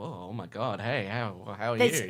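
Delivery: swooning, starstruck, stammering gush. Imitating Rose being strongly attracted to Jack: imitating Rose, smitten. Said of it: "Rose would be like".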